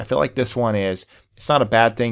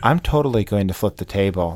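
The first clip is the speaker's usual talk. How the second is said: mock unnervingly calm, level, even voice. Speaker acts out what Jonathan says: mock-calm Jonathan impression. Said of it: "he says it in such a calm voice".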